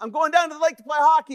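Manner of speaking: put-on high, bright-pitched boy's voice.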